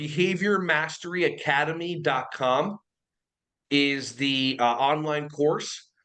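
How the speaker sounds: slow, deliberate, carefully paced word-by-word delivery. Guest repeats the program's web address for the host, saying it slower.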